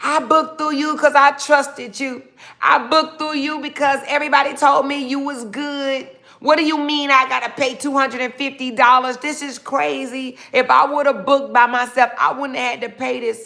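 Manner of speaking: put-on furious, angry yelling rant. Retelling a client on the phone yelling at the speaker over a fee, imitating a yelling client. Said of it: "this person on the phone yelling at you like crazy".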